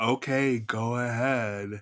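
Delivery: put-on sarcastic voice.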